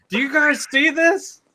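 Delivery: shrill, very high-pitched yelling. Retelling how someone ran outside during a parade: imitating Joe yelling. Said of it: "just yelling".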